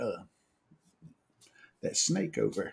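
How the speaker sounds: barely audible, very soft, hushed whisper. Retelling a warning about a snake while floating on tubes: imitating a whisper. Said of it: "then she whispers to me".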